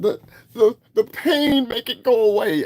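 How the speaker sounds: very high, stagey, tragic, grand theatrical declaiming. Mocking people who post online, in their dramatic theater voice. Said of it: "in their great theater voices".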